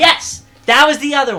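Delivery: high, loud, excited yell. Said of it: "Sorry, I yelled".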